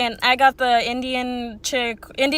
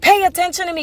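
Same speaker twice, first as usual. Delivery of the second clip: put-on scream, higher pitch; 5 semitones higher, 3 dB louder than usual. Retelling how an angry customer screamed at the counter: imitating someone screaming. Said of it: "screaming at the top of his lungs".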